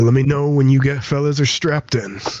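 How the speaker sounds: gruff, rough male voice. Game narrator voices a man speaking through an intercom, in a gruff male voice. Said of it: "It is a gruff male voice".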